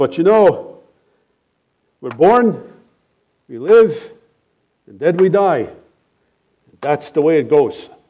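put-on thick German accent. Retelling what a man said after praising a woman's husband, thick german accent. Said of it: "in a very thick German accent".

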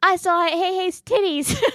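put-on loud, high-pitched three-year-old voice at full volume. Aunt retelling what her three-year-old niece told her grandpa, imitating Lakin's loud toddler voice. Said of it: "her loudest three-year-old voice".

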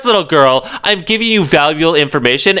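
condescending, bitchy tone.

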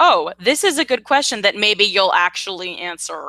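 ordinary delivery

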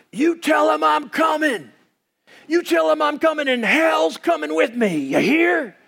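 menacing, mean, shouted, very high-pitched yell. Retelling a movie gunfight, imitating Kurt Russell's mean yell at an outlaw. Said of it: "yells out in this mean voice".

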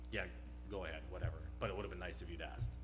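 put-on impatient, annoyed tone, low and rushed. Retelling their own earlier reply, the speaker re-enacts it: mock-impatient tone. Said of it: "I said it in a tone that I clearly wasn't patient".

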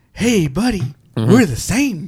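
put-on cool voice. Imitating a movie actor's cool voice while talking about the film: imitating Frederick's cool voice. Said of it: "he's got that cool voice 'cause he's all like".

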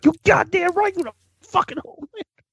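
high-pitched, fast, hyped excited voice.

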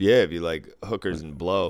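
plain

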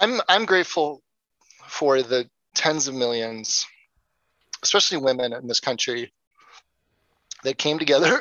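emotional, choked-up, voice breaking and catching. Speaker resumes answering after being told choking up is fine, choked up. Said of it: "I'm going to try to do it without choking up".

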